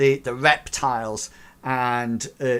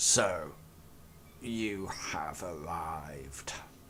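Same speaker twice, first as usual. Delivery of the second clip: very deep, low, hushed, drawn-out guttural rasp; 8 semitones lower, 13 dB quieter than usual. Voicing a figure in a cavern who speaks of its own accord, guttural rasping voice. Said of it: "this almost like guttural, rasping voice".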